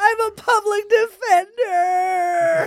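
high sobbing wail through tears.

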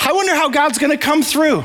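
audible grin, beaming smile, very high-pitched voice. Retelling what a man said, imitating his smiling voice. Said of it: "You can hear the smile on his face".

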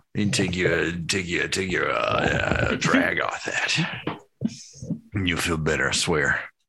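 put-on smooth buttery voice. Talking someone through lighting and smoking: buttery voice. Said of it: "doing the buttery voice".

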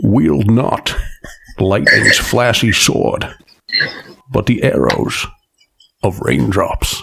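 very slow, drawn-out, rough, rasping voice. Reading a poem aloud after being asked for a voice: Sean Connery voice. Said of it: "Sean Connery or something like that".

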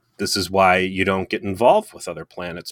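ordinary delivery

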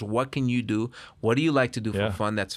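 normal talking voice

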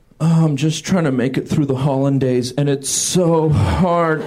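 gloomy, dejected, depressed, sad voice. Doing an impression of brunch food, depressed Eggs Benedict voice. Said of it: "This is depressed Eggs Benedict".

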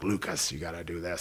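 soft, raspy, urging tone. Player recalling an older teammate talking to him on the bench, imitating Borya's raspy voice. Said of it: "Borya had that raspy voice".

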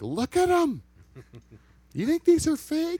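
mock, very high, shrill, swooping yelling. Retelling how a woman yelled at a friend: imitating a woman yelling. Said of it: "yelling at him".

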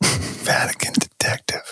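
hushed, slow, secretive whisper.

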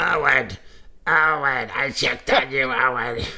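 put-on elderly woman voice.

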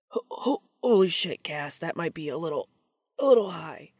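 stammering, stuttering delivery. A narrator reads Dean speaking to Cass: stammering. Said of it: "Dean stammered out".

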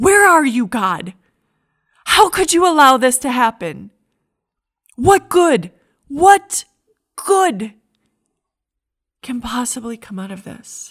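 anguished scream at top of lungs, very loud, high. Retelling how a godly man screamed at god this week, re-enacting the scream. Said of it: "I found myself just screaming at the top of my lungs".

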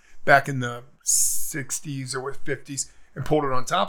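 ordinary talk

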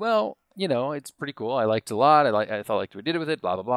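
plain

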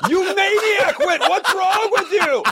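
very high, drawn-out, shrieking yell. Retelling being drenched on a speeding boat: imitating a scream. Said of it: "I'd be screaming".

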